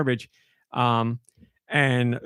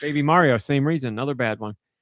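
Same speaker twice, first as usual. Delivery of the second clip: usual speaking voice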